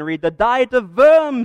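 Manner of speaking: put-on German accent, hammy, loud, slow and drawn out. During a class presentation, joking with classmates, in a put-on German accent. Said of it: "the German accent".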